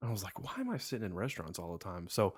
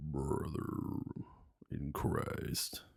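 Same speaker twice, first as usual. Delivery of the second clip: very deep, low put-on register; 6 semitones lower than usual. Asked to see how deep they can go, speaking in a very deep voice. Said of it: "It's not really my real voice".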